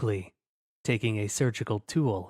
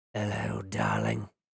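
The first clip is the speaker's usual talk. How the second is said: put-on very low, rasping, raspy British accent; 12 semitones lower than usual. Narrator voicing a dripping entity greeting a researcher, low, raspy British voice. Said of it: "A low, raspy voice hinted, with a British accent".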